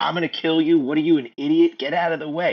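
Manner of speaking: worked-up, acted-out ranting scream. Retelling how a food truck kid screamed at a wife: imitating someone screaming.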